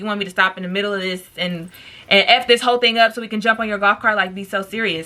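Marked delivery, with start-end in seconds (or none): none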